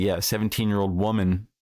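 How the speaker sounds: normal talking voice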